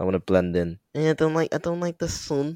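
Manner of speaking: put-on Scouse accent. Speaker practices a scouse accent and asks how it sounds, put-on scouse accent. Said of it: "getting there with the Scouse accent now".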